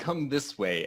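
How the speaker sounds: mock high yell. Calling other characters to follow during a game action: yelling. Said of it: "I yell".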